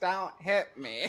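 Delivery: silly, goofy, dopey put-on creature voice. Recalling how a character in the game talked, in a silly voice. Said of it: "He had like some stupid ass voice".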